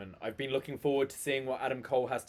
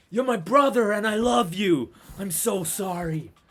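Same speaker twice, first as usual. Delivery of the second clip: mock emotional put-on voice, higher and louder; 8 semitones higher, 9 dB louder than usual. Acting out a wrestler's apology after a match, imitating an emotional Roddy. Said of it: "It's very emotional".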